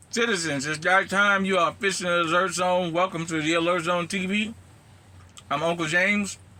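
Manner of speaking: loud, high-pitched talk through a mouthful of food. A host opens his channel's intro, talking with mouth full. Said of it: "I'm chewing".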